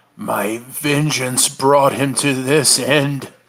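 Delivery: slow, broken voice cracking on every word. Narrating a character with a hand on his shoulder, under his breath in a broken voice. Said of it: "kind of under his breath in a broken voice".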